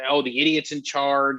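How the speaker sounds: usual speaking voice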